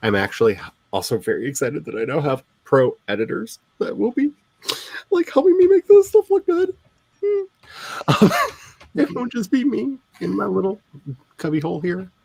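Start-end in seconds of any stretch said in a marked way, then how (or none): 3.1-12.1 moved, emotional voice, pitched up and swooping. Talking about now having pro editors to help with your writing: getting emotional. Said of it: "Sorry, I'm getting emotional".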